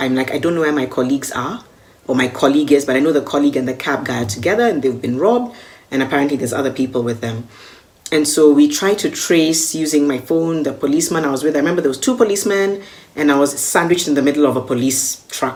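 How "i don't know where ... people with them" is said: ordinary talk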